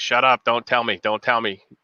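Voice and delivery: ordinary talk, nothing marked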